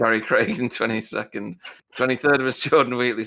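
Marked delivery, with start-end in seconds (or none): 1.9-3.2 giggly speech broken up by laughter. Reading out race finishing positions to a co-commentator, laughing while talking. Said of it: "stop making me laugh".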